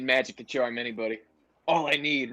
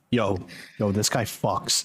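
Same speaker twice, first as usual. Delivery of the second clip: whispering, lower; 3 semitones lower than usual. Whispering to Zelf about a newcomer in the group: whisper. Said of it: "I'm gonna whisper to Zelf".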